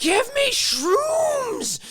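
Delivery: put-on very high, rowdy, drunken screaming. Retelling a drunk guy in a parking lot, imitating someone screaming. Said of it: "He's screaming".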